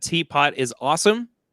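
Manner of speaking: normal talking voice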